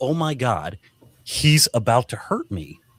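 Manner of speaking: tearful, shrieking scream while crying. Describing a young woman running up to a man, imitating screaming and crying. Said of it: "screaming and crying".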